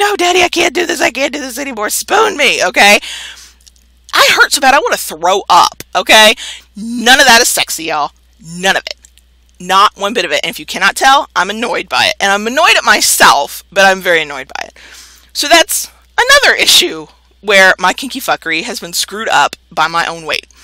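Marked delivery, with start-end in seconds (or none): 0.0-2.6 high, worn-out, pleading tone. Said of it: "I'm usually like".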